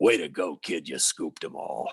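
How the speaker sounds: gravelly whisper, very low and slow. Retelling the Cardinals play-by-play voice congratulating him before a live shot: Jack Buck's gravelly whisper. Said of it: "whispers into my ear".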